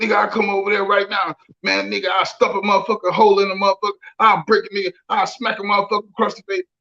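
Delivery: fast, wild, rattled-off crazed rant. Speaker retells how his dad from Little Rock talks, imitating dad talking crazy. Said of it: "he talks crazy".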